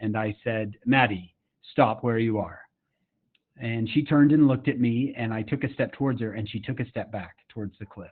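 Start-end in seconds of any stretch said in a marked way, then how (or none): 0.9-2.6 play-acted commanding, stern, firm fatherly voice. Speaker retells calling out to someone near a cliff; retelling a stern dad voice. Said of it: "I had to use my dad voice".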